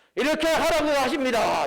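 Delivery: high, loud, belted-out announcer-style proclamation.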